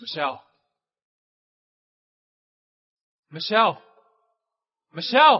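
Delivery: loud yelling. Calling out for Michelle: yelling a name. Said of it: "Why are you yelling?".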